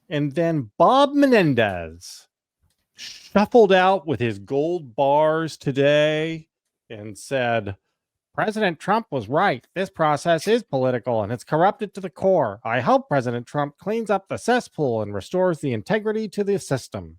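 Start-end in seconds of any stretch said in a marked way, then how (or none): 8.3-17.0 rattled off quickly in a puppet-like voice. Quoting what Bob Menendez said today, in a little Muppet voice. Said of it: "in his little Muppet voice".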